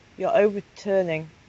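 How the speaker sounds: ordinary talk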